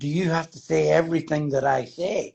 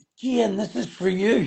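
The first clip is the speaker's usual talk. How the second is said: pitched-up line, called out loudly upward; 5 semitones higher than usual. Retelling calling up to the penthouse at a gig: imitating own past shout. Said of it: "and I shouted".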